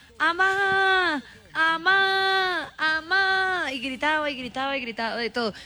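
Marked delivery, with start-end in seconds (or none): 0.2-3.7 put-on parrot shouting, much higher, slower. Telling about the parrot at home, imitating the parrot shouting. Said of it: "la lorita gritaba".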